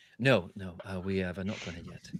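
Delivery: theatrical stage whisper. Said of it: "Stage whisper".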